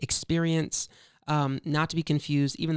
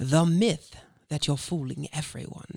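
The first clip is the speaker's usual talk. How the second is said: put-on British accent. Saying the episode subtitle after being asked, in a put-on British accent. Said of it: "Do I need to do the British accent too?".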